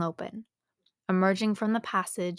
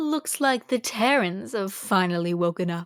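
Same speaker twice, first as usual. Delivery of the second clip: self-important, pompous, sneering, mocking tone; 3 dB louder than usual. Narrator voicing a tentacled alien addressing two captives, pompous voice. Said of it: "he said with a pompous voice".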